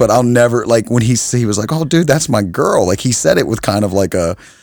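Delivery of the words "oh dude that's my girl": high, stunned, shocked, taken aback, not angry. Retelling what a friend said on learning the news: imitating a friend's shocked voice. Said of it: "a shock in his voice".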